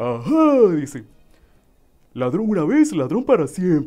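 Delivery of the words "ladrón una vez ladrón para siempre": high-pitched cartoon voice with swooping, swinging pitch. Showing examples of the voices he can do, a line as Patricio. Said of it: "O por ejemplo, la de Patricio, ¿verdad? De Bob Esponja".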